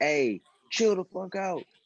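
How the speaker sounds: acted-out, high-pitched yelled scream. Acting out a hypothetical player's words to Kyrie: imitating someone screaming. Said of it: "him screaming at Kyrie".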